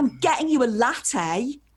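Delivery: pushy, overbearing tone. Speaker retells her past self offering a coffee to a man she just met: mock-aggressive. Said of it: "like really aggressively".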